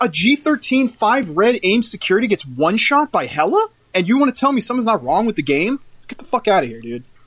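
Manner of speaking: heated, worked-up, angry ranting voice. Speaker complaining to friends about a one-shot in the game: heated. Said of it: "I'm heated".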